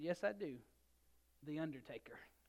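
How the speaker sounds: quiet, low, calm, soft-spoken voice. Telling a joke, the speaker voices a wife answering her husband, quietly replying. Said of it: "she quietly looked at him and said".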